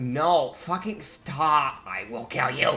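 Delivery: fed-up, threatening voice. Voicing the Countess holding a struggling captive: fed-up Countess Mistus. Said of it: "she's getting fed up with his shit".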